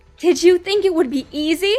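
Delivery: loud hissed words. A fighter sinks teeth into the RiverClan deputy's shoulder mid-battle, hissing. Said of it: "she hissed".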